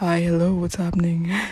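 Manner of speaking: loud, raspy, deep masculine bass voice. Speaker shows how his own voice sounds in his head: deep, raspy, manly voice. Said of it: "like deep, raspy, manly".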